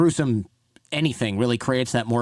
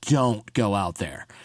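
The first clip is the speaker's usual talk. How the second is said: mock pleading voice, lower pitched; 3 semitones lower than usual. Telling a listener how he looked at you and pleaded; retelling a pleading plea. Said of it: "he was like pleading with me".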